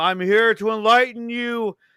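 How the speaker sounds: put-on menacing villain voice. Retelling a villain's big line to the others, mock-menacing villain line. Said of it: "that's some menacing shit".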